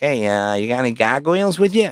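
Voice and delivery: put-on funny local New Hampshire accent. Retelling what a guy in New Hampshire asked at your table, in a funny New Hampshire accent. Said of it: "New Hampshire people talk funny".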